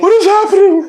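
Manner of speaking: mock stunned, bewildered, very high, shocked blurted delivery. Retelling a roommate's reaction to a night disturbance: imitating someone shocked.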